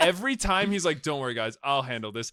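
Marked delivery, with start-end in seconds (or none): none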